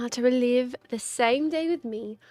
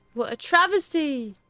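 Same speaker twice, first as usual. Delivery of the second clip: little put-on British accent, done for fun; 3 semitones higher than usual. Speaker reacts between narration lines, doing a little British accent. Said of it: "doing my little British accent here".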